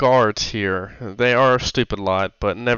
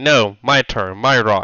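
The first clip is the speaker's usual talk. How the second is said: very slow, drawn-out, dragging goblin voice. Describing goblins throwing rocks at a bird: goblin voice. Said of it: "one will be like".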